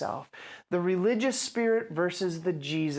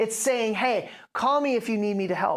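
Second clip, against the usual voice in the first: ordinary talk, nothing marked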